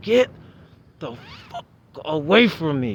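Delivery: half-voiced acted yell, mild, swinging pitch. Retelling the moment a stranger said a name: retelling a yell at top of lungs. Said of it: "I yelled at the top of my lungs".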